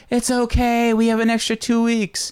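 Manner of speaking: acted, very high screaming. Recounting a scene where a woman bangs on a door: retelling screaming through a door. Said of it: "banging on the door and screaming out like".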